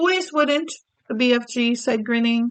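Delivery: ordinary delivery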